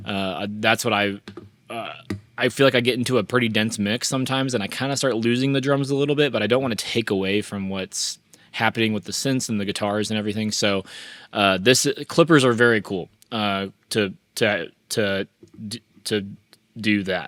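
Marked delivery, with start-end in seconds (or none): 13.3-17.3 stuttering with stumbling repeats. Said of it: "I don't know why I'm stuttering".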